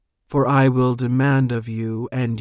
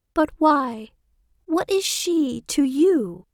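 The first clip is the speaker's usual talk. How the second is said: quavering, trembling, shrill, very high voice. Narrator reads a voice in the story asking questions, trembling, shrill voice. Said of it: "Says a trembling, shrill voice".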